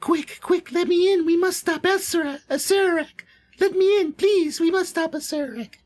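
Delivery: very high, female rabbit character voice. Narrating a game, voicing the spectral rabbit that speaks; female voice. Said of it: "you hear a female voice".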